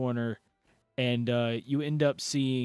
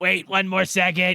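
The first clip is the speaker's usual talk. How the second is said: kobold creature voice, higher and louder; 7 semitones higher, 8 dB louder than usual. Voicing a kobold calling through a door hole: kobold voice. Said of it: "you hear the kobold".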